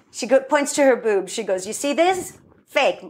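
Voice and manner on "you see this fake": exaggerated, very bad mock Latin American accent, pitched up.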